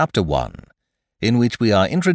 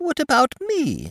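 squeaky voice, way up high. Reading aloud as Piglet interrupts to ask about himself: squeaky Piglet voice. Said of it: "said in his squeaky voice".

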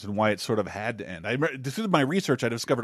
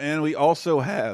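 voice cracking, going higher; 3 semitones higher than usual. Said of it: "sorry for the voice crack there".

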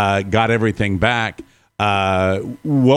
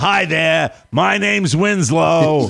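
put-on slow, drawn-out Boston accent, pitched up; 6 semitones higher than usual. Introducing himself as Winslow: Winslow's Boston accent. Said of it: "He's got a Boston accent".

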